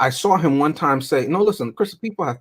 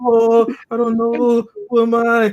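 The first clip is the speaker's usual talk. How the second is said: very high, very drawn-out, slow fake sobbing; 9 semitones higher, 3 dB louder than usual. Retelling how Doctor Evil mocks Scott crying: imitating Doctor Evil mocking crying. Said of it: "he was mocking him".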